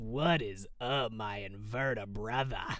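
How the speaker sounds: put-on stoned, slow, dragged-out drawl. Showing how they always voiced a particular character: stoned, dragged-out voice. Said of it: "stoned, really dragged out voice".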